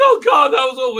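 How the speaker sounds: weepy, sobbing, blubbering crying voice. Retelling how someone reacted after an ordeal: imitating someone crying. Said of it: "he's crying".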